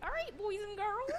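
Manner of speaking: high-pitched cartoon mouse voice. Repeating the sign-off line to match a comparison: Mickey Mouse voice. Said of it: "That sounds like Mickey Mouse".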